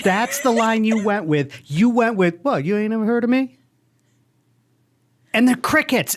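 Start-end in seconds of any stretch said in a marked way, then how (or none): 2.4-3.6 smooth-talking genie voice. Quoting the genie's line from a teaser: imitating a smooth genie voice. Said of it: "He's got a smooth genie voice".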